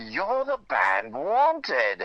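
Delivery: put-on grand British accent, slow and swooping. Retelling how a man stepping out of the elevator greeted them: imitating a British accent. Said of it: "with a great British accent".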